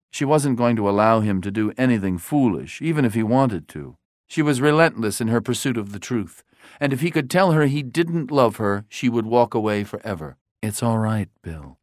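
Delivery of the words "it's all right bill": gentle, tender whisper. Narrator reads a woman reassuring a man, whispered tenderly. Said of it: "she whispered tenderly".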